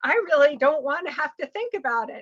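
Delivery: high, loud, carefree and breezy dismissive tone. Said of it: "She's like".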